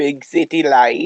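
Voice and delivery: put-on Australian accent. Talking about the heat in the city, tossing out a phrase in an australian accent. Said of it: "you said it with an Australian accent".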